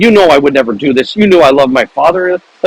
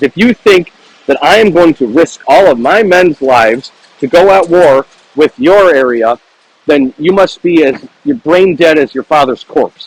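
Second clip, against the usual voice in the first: usual speaking voice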